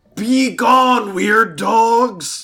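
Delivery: very loud, very high shout, "dogs" stretched. Yelling at the hyenas in character to intimidate them: in-character yell. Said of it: "I'm yelling".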